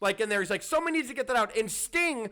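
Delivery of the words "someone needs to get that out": mock pissed-off hollering, pitched up. Recalling an interview with a fire burning nearby: imitating Gene Okerlund yelling.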